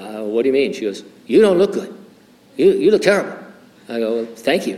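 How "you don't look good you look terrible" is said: put-on Chinese accent, pitched high. Quoting a woman who speaks before she even sits down, in a put-on Chinese accent. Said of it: "so I'm going to do a Chinese accent".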